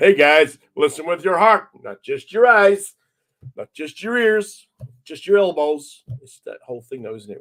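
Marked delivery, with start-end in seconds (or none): 0.0-6.0 very loud, slow, drawn-out put-on American accent. A British speaker redoes his line as if with an American accent. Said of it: "if I had an American accent, it would sound much better".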